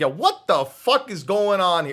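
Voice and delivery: hot-tempered loud Jersey accent. Showing how his Jersey accent comes out when he gets angry, mock-angry Jersey accent. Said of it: "when I get angry, it really comes out".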